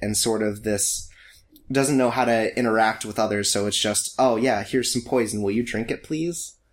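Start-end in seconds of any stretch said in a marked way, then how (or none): 4.2-6.6 put-on meek, quiet voice. Acting out a very meek person offering someone poison, imitating a meek, quiet person. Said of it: "very meek, very quiet".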